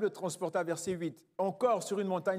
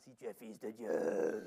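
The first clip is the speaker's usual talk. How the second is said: very low, slow, strange-sounding voice; 10 semitones lower, 7 dB quieter than usual. Quoting the devil tempting Jesus: imitating the devil's strange voice. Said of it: "avec sa voix bizarre".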